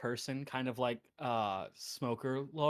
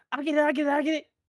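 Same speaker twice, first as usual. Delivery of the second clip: put-on eager small child voice, very high, very loud; 14 semitones higher, 9 dB louder than usual. Voicing a tiny figure running to the door: small child's excited voice. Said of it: "tiny little pitter-patter of what you hear is".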